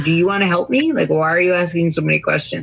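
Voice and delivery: sarcastic, mock-helpful, facetious, snarky. Retelling a second answer to the same question: imitating own facetious reply. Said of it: "this time I got even more facetious".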